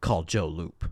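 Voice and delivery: low, menacing, threatening delivery. Speaker quotes Nick's line from a scene, in Nick's put-on menacing voice. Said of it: "Nick says in the you know menacing voice".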